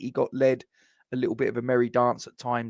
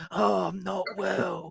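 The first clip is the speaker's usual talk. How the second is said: high, fake sick voice, sorry for itself; 7 semitones higher, 4 dB quieter than usual. Imitating people who phone the boss to call in sick, in a mock sick voice. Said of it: "on the sick and they do that voice".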